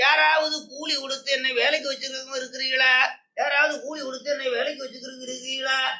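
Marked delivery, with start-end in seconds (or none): 0.0-3.0 high, carrying calling-out voice. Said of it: "அப்படின்னு சத்தம் போட்டுருக்கோம்".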